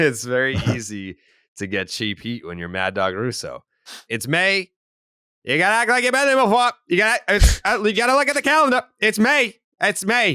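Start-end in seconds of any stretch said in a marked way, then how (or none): 4.1-10.4 put-on very high, old-fashioned newsboy voice. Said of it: "sounds like one of those old-timey paperboy guys".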